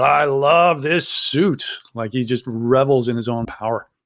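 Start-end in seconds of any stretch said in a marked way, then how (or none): 0.0-1.7 mild, slow, gloating mock yell. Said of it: "he yells out".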